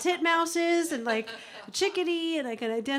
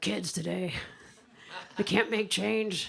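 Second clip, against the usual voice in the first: put-on grumpy old man voice; 7 semitones lower, 4 dB quieter than usual. Speaker voices the grumpy old man inside their head, imitating a grumpy old man. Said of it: "kind of a grumpy old man in there".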